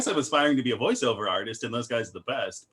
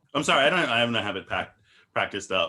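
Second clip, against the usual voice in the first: ordinary talk, nothing marked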